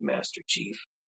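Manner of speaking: voice dropped way down, deep and breathy. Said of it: "my voice dropped, like, way down here".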